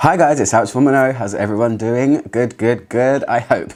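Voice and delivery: speech mixed with laughter. Greeting viewers at the start of a video: laughing while talking. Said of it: "I'm laughing".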